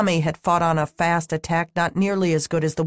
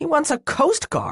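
very high, spitting the words; 10 semitones higher than usual. Reading a man at a table after another has left the room, spat. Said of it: "Phil spat".

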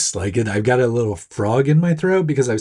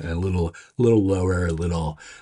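low, gruff, sultry, dropped voice. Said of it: "maybe it's a more sultry voice this week".

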